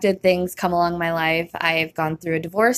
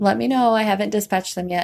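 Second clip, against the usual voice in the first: very calm voice, higher pitch; 3 semitones higher than usual. Retelling the dispatcher's reply during an oven fire: imitating the dispatcher's calm voice. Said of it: "very calm".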